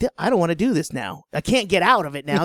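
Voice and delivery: normal talking voice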